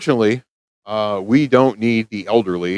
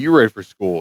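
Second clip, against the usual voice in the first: normal talking voice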